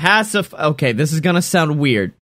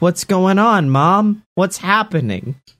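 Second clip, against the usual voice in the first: put-on worried, concerned, babyish little baby voice; 4 semitones higher than usual. Walking over to Mom as a concerned baby. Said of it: "I give her a concerned baby".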